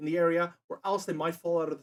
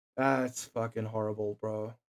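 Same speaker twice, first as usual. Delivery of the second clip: ordinary delivery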